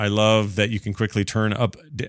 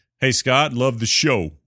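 put-on Brooklyn accent. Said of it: "That's my Brooklyn accent".

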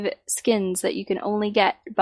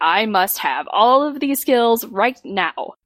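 very weird announcer-style delivery; 2 semitones higher than usual. Recalling unlocking the Griffin in a game, in a weird announcer voice. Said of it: "In that very weird announcer voice".

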